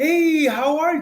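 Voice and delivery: happy, projected, high and loud cheerful voice. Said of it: "be happy, smile to people, project your voice".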